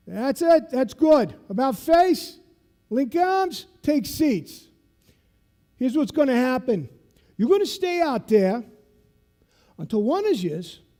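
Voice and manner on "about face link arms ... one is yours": imitated South Boston accent. Retelling how a man gave orders on the beach, in his South Boston accent. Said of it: "he talks like this because he's from South Boston".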